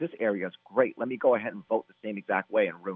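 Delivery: plain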